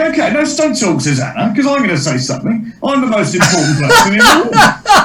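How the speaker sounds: high, sing-song, swooping voice with a lisp. Showing a joke written for the impression: Piers Morgan voice. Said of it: "I was doing a bit of Piers Morgan".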